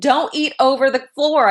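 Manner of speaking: acted scolding yell, high-pitched. Retelling what gets said to the girls: imitating own yelling. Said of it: "I'm yelling at the girls".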